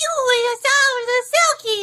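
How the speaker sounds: eerie, creepy, very high-pitched voice. Retelling a voice heard while playing a game, creepy voice. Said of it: "heard the creepy voice go".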